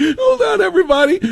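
mock giggly laughing voice. Retelling how a reporter's question was answered: imitating Kamala Harris giggling. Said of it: "your response is to giggle about that?".

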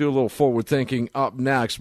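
ordinary delivery

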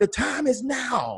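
mock slow, loud, drawn-out country holler. Retelling what a man from the country yelled at them, retelling a loud country yell. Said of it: "He's like".

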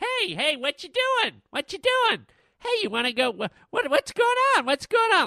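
squeaky, high pitched, needling tone. Describing the viral video's talking orange: Annoying Orange voice. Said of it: "and he's like".

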